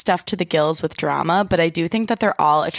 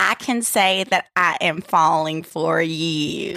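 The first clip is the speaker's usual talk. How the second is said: put-on slight Southern accent. Showing how Hannah Brown sounds: imitating Hannah Brown with a Southern accent. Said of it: "a little bit of a Southern accent".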